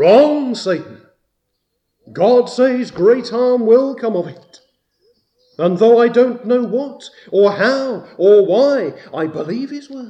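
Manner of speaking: high, loud defiant delivery. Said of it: "Faith answers".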